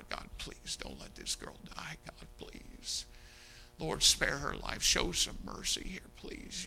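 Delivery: mock hushed, whispered, begging plea. Recalling holding a little girl's hand at her bed, retelling begging God. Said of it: "I'm begging God".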